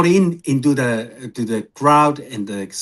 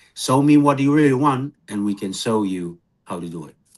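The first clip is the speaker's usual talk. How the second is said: normal talking voice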